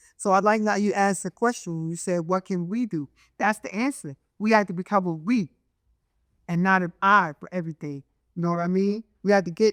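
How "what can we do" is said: normal talking voice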